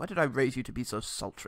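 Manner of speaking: bumbling, muttered aside under the breath. Retelling a film scene, quoting the father: bumbling Ian McKellen. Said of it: "Ian McKellen just bumbles to himself".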